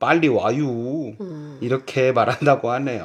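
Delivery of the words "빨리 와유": Chungcheong regional dialect accent. Sharing Korean regional dialect expressions found online, now in Chungcheong dialect. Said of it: "충청도 사투리로는".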